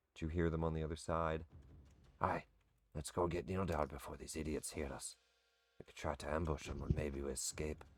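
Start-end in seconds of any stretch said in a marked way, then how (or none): 2.2-7.7 hushed dwarf-voice half-whisper. Voicing two invisible dwarves planning in secret: half-whispering dwarves. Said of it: "you start to hear in Dwarvish some whispering".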